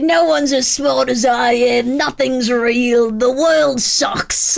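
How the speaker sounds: loud, slow, very British put-on narrator voice. Describing a podcast's untrustworthy narrator: put-on british accent. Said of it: "The narrator is just very British and like".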